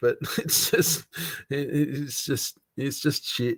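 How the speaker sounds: breathy whisper, words broken by laughter. Admitting putting oneself in the pickle, laughing while talking. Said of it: "sorry for laughing so much".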